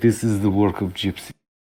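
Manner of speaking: put-on with a Russian accent. Quoting a character's reaction to Ant-Man shrinking, in Malchin's Russian accent. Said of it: "in the I think it's a Russian accent".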